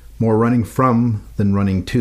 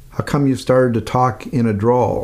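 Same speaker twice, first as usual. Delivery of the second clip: normal talking voice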